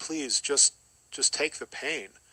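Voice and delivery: tearful, weeping plea. Retelling what was said while lying there weeping: retelling a tearful plea. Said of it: "weeping and crying and going".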